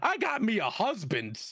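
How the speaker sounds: put-on high, cutesy called-out shout. Retelling a moment when the gates close and a woman shouts, imitating her shout. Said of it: "just shout like".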